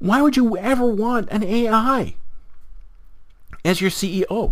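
high-pitched freaked-out panicky voice. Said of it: "freaking out and going".

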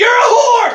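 high, loud, outraged yell.

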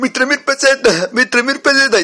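put-on acted panicky boy voice. Telling a story, voicing a boy as he panics. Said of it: "Que entra en pánico".

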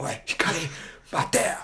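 menacing, scary, high-pitched calling-out tone. Retelling how someone called out to him from behind, imitating a scary tone. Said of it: "口調がめっちゃ怖くて".

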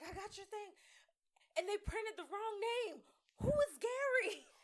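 frantic alarm, very high, loud and shrill. Retelling a cousin's phone call about misprinted wedding invitations: imitating a panicked cousin. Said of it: "My cousin called me panicking".

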